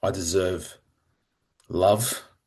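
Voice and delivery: slow, deliberate, fully owned delivery. Asked to say the phrase again slowly and own it, slow and deliberate. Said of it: "Say that slowly and really own it".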